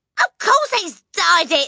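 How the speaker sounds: very high, loud cried-out exclamation. The mother cuts in after her son speaks to his father, crying out. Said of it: "the mother cried".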